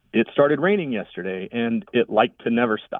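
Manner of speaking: ordinary talk, nothing marked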